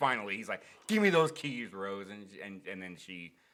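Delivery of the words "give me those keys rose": very loud, high-pitched, furious angry yell. Retelling a scene where he finally demands the keys: imitating someone yelling angrily. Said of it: "he starts getting angry".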